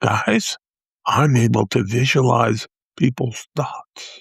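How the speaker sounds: slow, loud stage whisper. Retelling how he leaned in to tell the group, in a loud stage whisper. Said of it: "whisper in a loud voice like it was the biggest secret".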